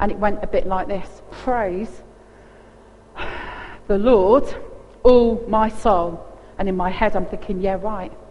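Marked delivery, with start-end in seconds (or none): 1.3-6.3 mock, very slow, frustrated praise through gritted teeth. Recalling how you first prayed, acting it out: retelling gritted-teeth frustrated prayer. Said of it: "I would pray with gritted teeth and frustration".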